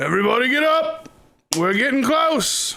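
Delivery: high, fast, rousing voice.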